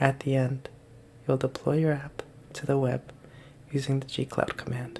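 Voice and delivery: ASMR-style reading voice. A coding video host tries reading the script in an asmr voice. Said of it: "or try to read this in A S M R".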